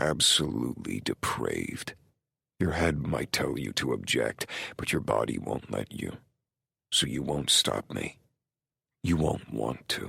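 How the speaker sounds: quiet whisper. Reading a story aloud, a character speaks into another's ear: low whisper. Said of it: "his low whisper right in my ear".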